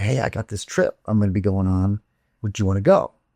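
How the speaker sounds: hushed, murmured stage whisper. Retelling what an older guy half-whispered to girls: imitating someone half-whispering. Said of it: "he'd be whispering in these girls' ears".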